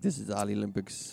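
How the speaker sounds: put-on Russian accent. Quoting a show host's Olympics bit, in a Russian accent. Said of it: "He did this Russian accent".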